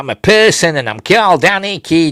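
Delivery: put-on high Yorkshire accent. Recapping a scene, quoting Anakin in a Yorkshire accent. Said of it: "he says in a Yorkshire accent".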